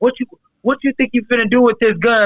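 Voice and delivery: acted challenging call-out, hot but held in. Retelling a gun standoff, the speaker voices another man yelling at the gunman: retelling a yell. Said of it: "he just started yelling at him like".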